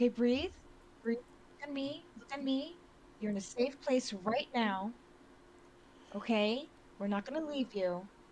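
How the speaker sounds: soothing, gentle voice. Calming down a panicked woman in the game: calm and soothing. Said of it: "I'm just gonna be like".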